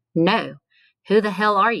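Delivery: forceful, demanding tone. A whaler, asked by a ragged stranger whether he knows him, demanding. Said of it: "Sorrell demanded".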